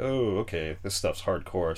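ordinary delivery

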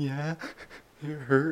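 acted-out, small, helpless whimpering voice. Recounting answering a nurse after needing the bathroom, retelling a whimper. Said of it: "And whimpering".

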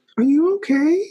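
high-pitched, concerned, worried voice. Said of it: "My sales associate was like".

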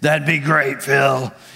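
low, deep, rough, raspy voice. Retelling a man's phone reply, imitating his deep, raspy voice. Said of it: "He's got this deep, raspy, love his voice".

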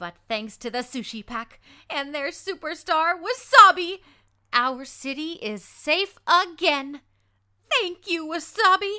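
high cartoon newscaster voice. Auditioning for a cartoon role, reading a news report: Sophia Tucker reporter voice. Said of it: "the character that you're going to be hearing me read is a reporter".

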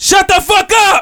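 very high, drawn-out, top-of-the-lungs scream. A woman's husband in a movie theater yells without turning around, retelling a top-of-lungs scream. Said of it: "scream at the top of his lungs".

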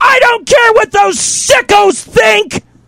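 mock very high-pitched, top-of-lungs screamed outburst. Speaker retells what a woman screamed at the top of her lungs, imitating her screaming. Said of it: "at the top of her lungs, she screams".

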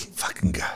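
soft, disgusted whisper. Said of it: "I'm gonna start doing it, just whispering insults".

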